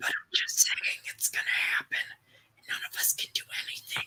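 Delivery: soft, breathy, barely voiced whisper. Speaking during a group discussion, whispering. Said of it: "I'm whispering".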